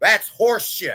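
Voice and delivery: exaggerated, put-on New Jersey accent. Quoting the speaker's girl answering a question, in a Jersey accent. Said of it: "in her Jersey accent".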